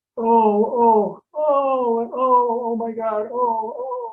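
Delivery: mock very slow, drawn-out weeping oh's. Retelling hearing a woman in the mountains, imitating her crying. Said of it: "she starts kind of crying".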